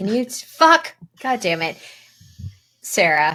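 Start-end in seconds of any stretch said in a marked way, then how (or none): 0.0-1.8 aggressive outburst, much higher and louder. Asking someone about an email, then stumbling and swearing aggressively. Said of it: "You just said fuck like really aggressively".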